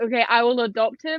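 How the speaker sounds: ordinary delivery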